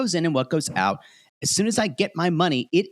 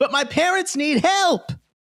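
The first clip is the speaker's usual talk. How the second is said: very high-pitched, emotional voice; 11 semitones higher than usual. Retelling what a man on a show said to his partner: imitating someone emotional. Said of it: "of course, is emotional".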